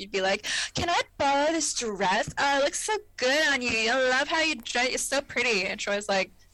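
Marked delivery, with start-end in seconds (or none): 0.7-5.6 mock drunk gushing, higher pitch. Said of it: "drunk as fuck".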